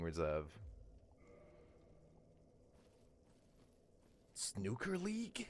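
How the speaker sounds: rough, breathy whisper. Mid-conversation, the speaker slips into a Solid Snake impression. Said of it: "why are you doing the Metal Gear Solid thing".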